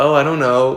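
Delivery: feigned, clueless, playing-dumb innocence. Retelling being asked why on Grindr: retelling playing dumb. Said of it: "I tried to play so fucking stupid".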